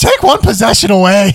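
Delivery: hype-style call-out. Recapping the keys to the game, shouting loudly. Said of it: "there's no volume control here".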